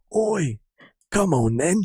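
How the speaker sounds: tough hard-man character voice. Guessing the silhouetted figure is Billy Butcher, then doing a Billy Butcher impression. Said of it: "Billy fucking Butcher?".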